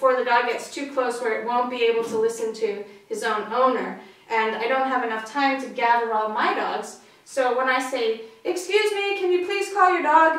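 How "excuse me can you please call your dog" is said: mock, loud, high, raised carrying voice. A dog owner demonstrates calling out to another dog's owner, loud voice. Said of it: "in a loud voice".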